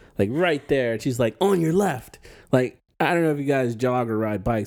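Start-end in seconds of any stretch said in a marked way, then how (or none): 1.4-2.2 acted snippy, high, attitude-laden shout. Retelling how a jogger passed close behind: imitating a jogger screaming. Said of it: "this lady jogging screams in my ear".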